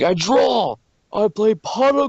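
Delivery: very high, slow, loud, drawn-out proclaiming voice. Showing how they play a starter deck, in their Yugi voice. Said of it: "I can do my Yugi voice".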